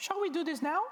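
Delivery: very high, lifted-up put-on voice. Acting out a startup dialogue, voicing the person who asks: very high voice. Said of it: "I will make a very high voice for the person asking for it".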